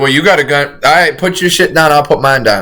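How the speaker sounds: ordinary talk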